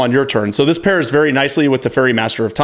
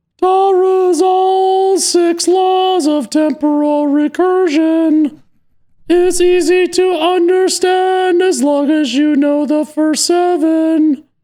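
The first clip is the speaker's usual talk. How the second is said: very high, slow falsetto head voice, stretched. Reading a title aloud after announcing a falsetto, in high falsetto. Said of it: "a little bit of the falsetto".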